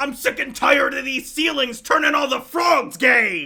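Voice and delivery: booming, very loud, high-pitched shout. Reading a chat message aloud as asked: loudest Alex Jones voice. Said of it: "said in the loudest Alex Jones voice".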